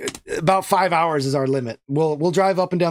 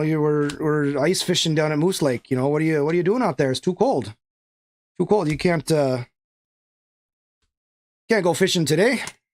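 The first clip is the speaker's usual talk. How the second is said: put-on Minnesota accent with long drawn O's. Describing someone's Minnesota-raised brothers, the speaker imitates them in a Minnesota accent. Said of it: "sometimes comes out in the O's".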